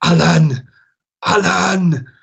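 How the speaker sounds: put-on Welsh accent, high, loud, with drawn-out words. Retelling a man in a match accusing the speaker, in a Welsh accent. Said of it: "in a Welsh accent".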